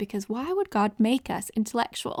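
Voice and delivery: ordinary talk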